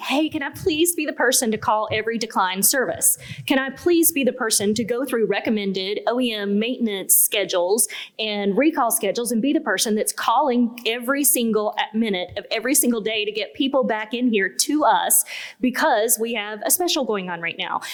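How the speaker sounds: ordinary delivery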